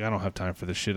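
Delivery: imitated under-breath muttering. Retelling what a manager who was called over muttered; retelling a mutter under breath. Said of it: "under her breath".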